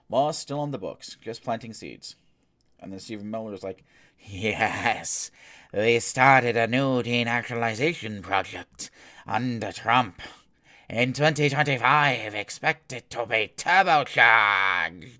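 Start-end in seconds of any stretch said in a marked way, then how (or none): 4.2-15.2 creepy, very slow, drawn-out, raised voice. Host voices a political aide's statement, creepy Dracula impression. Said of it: "my best creepy Dracula impression".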